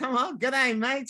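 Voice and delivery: Australian accent. Speaker jokes with Con about making Jennifer talk Aussie, Aussie accent. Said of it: "talk Aussie".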